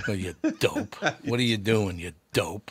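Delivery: tough, deep, low, chiding voice. Imitating his mother calling everyone a dope: imitating Toots. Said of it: "In my mother's house, everybody was a dope".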